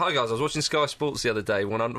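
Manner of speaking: usual speaking voice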